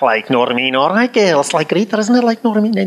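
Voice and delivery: fast, high-pitched Birkenhead-Liverpool accent. Showing how family from near liverpool talks, imitating a liverpool accent. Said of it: "Have you ever heard people talk like that?".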